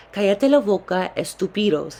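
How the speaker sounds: normal talking voice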